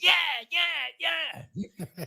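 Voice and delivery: acted-out, shrill, very high, loud screaming. Recalling the listener at a Denver game on someone's free food: imitating someone screaming. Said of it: "And you're screaming".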